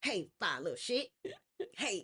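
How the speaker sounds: mock flirty, flirtatious delivery. Describing how a man is told to approach a woman, mock flirty pickup line. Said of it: "You got to be like".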